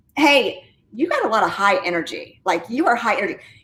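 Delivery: plain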